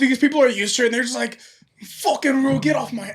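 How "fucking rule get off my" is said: bad put-on Australian accent, higher pitch. Imitating people used to kangaroos: bad Russell Crowe Australian accent. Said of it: "That was his Russell Crowe Australian".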